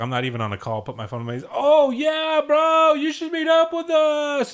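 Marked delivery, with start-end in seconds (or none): 1.5-4.5 mock very high, very slow, loud, drawn-out passive-aggressive voice. Acting out a fake phone call near a loud talker: passive-aggressive fake phone talk. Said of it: "it is a passive aggressive".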